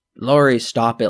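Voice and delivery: ordinary talk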